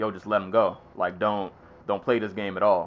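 plain

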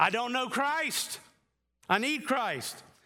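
mock loud crying-out voice. Retelling how Paul persecuted the church, imitating Paul shouting. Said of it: "Paul was shouting".

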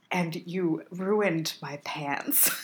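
put-on slow, stiff, every word over-enunciated, American accent. Mimicking how the actor says a line: imitating Chuck's over-enunciated American accent. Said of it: "work for him to do an American accent".

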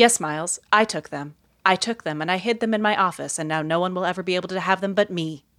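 put-on bone-dry, flat, straight-faced deadpan understatement. Retelling how Jim answered Miles, mock deadpan delivery. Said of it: "Jim with the best deadpan".

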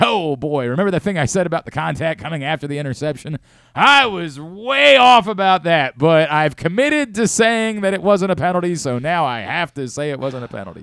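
dawning realization, thinking aloud. Retelling how an analyst sounded rewatching a play: imitating Gene Steratore. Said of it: "you could hear as he's seeing it".

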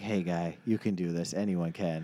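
slow, hushed, theatrical stage whisper. Picking Jacksonville and imagining Nick Foles speaking: imitating Nick Foles half-whispering. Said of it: "Nick Foles is gonna whisper and be like".

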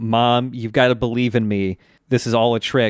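ordinary delivery

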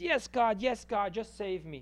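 acted-out scream. Telling a joke, the speaker acts out a man on a branch crying to god: retelling a scream. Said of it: "And he screams".

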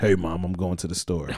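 very deep, mysterious voice dropped way down low. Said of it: "Deep voice".

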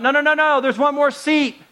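high, put-on kid voice yelling out. Retelling a kid on a bus calling out a seat: imitating a kid yelling. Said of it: "a kid yells out".

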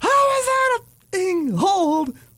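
very high, drawn-out, swooping scream. Acting out a player after an obvious hold call: imitating a player screaming. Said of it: "and you scream".

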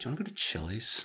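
snaky, salty, hushed half-whisper. Retelling how Diana turned to him as the credits rolled, imitating Diana's salty, snaky voice. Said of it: "in that salty, snaky voice of hers and goes".

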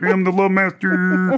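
goofy, high, drawn-out puppet-frog voice, words stretched. Retelling how a man tries to be the love master: Kermit voice. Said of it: "They all sound like Kermit".

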